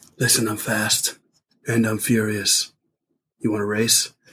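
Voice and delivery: terrible low, slow, raspy movie-star voice. Doing a terrible Vin Diesel impression, challenging to a race. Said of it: "we're terrible Vin Dieselists".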